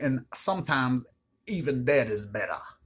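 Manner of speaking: put-on Cajun accent, man's voice. Describing an evil deck in a video, slipping into the wrong voice: Cajun man accent. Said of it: "That was like a Cajun man".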